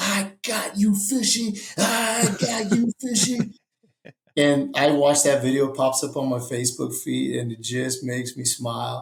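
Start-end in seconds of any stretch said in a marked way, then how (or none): 0.0-3.5 put-on very high, drawn-out little kid hollering. Retelling how a young son yelled at a fish: imitating a child yelling at a fish. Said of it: "he's yelling at the fish".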